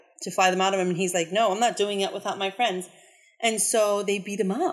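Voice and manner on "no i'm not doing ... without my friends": usual speaking voice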